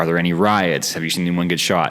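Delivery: normal talking voice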